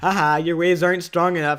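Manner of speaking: loud, taunting yell. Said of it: "I literally would yell at the waves".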